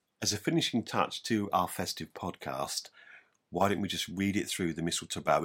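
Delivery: ordinary talk, nothing marked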